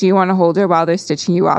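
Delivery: ordinary talk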